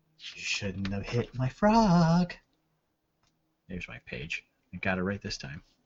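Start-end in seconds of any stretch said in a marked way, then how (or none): 0.3-2.3 very quiet hushed whisper. Narrator voicing a speaker the player hears, in a very quiet whisper. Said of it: "You hear very quietly".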